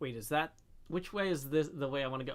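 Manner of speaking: ordinary talk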